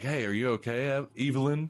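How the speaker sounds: sympathetic, concerned tone. Retelling a film scene where the boyfriend shows sympathy: imitating a sympathetic tone. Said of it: "starts to show her sympathy".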